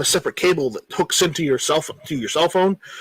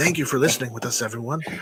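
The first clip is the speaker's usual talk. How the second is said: mock podcast announcer voice, lower and quieter; 4 semitones lower, 7 dB quieter than usual. Joking about the voice people use on podcasts, signing off in a mock podcast host voice. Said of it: "You have to use that voice if you're going to do a podcast".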